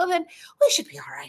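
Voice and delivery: high mock leprechaun voice. Retelling a companion's reply about getting stuck, imitating Fiona as a leprechaun. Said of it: "I'm gonna make her sound like a leprechaun".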